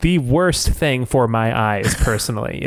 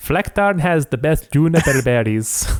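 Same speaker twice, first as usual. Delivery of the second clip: put-on Nordic warrior accent; 3 semitones higher than usual. Joking about a camouflage name sounding Nordic: put-on Nordic accent. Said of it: "That was my best Nordic accent".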